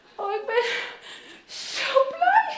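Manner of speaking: overjoyed, close to tears, very high and slow. A parent finding their son again: so happy almost crying. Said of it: "zo blij bent dat je bijna moet huilen".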